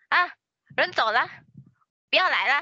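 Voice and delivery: high, loud, grumbling man's voice. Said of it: "a guy voice from the background".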